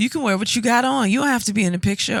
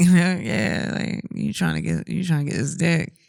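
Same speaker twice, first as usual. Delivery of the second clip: put-on sexy, flirty giggling; 2 semitones lower than usual. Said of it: "That's the giggle you give me".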